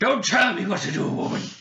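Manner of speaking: irate man's high, angry shout. Voicing the wizard answering a player: angry man voice. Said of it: "It's more just like angry man".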